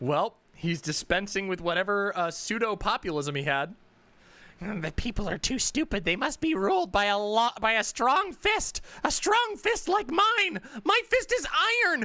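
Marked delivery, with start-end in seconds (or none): 4.8-12.1 put-on tough-guy bluster, pitched up, voice cracking. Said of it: "ignore the cracking in my voice".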